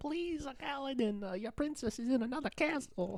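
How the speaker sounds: badly done, squeaky, very high voice. Joking with friends after Toad from Mario came up: bad Toad impression. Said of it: "That was possibly the worst toad impression".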